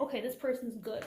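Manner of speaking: ordinary talk, nothing marked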